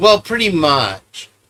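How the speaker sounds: put-on snide, smarmy, sarcastic know-it-all tone. Imitating a witness's answer to questions: imitating a sarcastic, smarmy reply. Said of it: "that's like a sarcastic way of".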